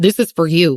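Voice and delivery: ordinary delivery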